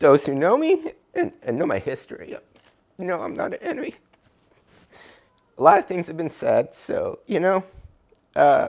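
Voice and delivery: openly moved, heartfelt. Speaking unscripted to those who know them and their history: emotional. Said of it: "sorry I'm emotional".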